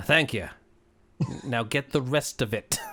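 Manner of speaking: dry, flat, expressionless deadpan delivery. Voicing Lenny, who stares at the player the whole time: deadpan. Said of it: "Lenny's looking at you deadpan the whole time".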